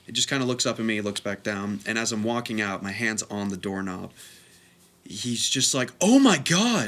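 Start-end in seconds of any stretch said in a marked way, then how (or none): 6.1-6.9 mock sudden, loud, high, blurted outburst. Retelling a teacher's outburst in class: imitating a loud abrupt exclamation. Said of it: "just very loudly and abruptly".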